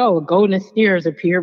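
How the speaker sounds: usual speaking voice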